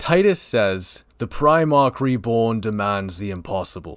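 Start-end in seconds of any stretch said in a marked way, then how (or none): 1.2-4.0 shoddy, badly done put-on British accent. Recapping a trailer, reading Titus's lines in bad put-on British accent. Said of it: "I'll even do a shitty British accent".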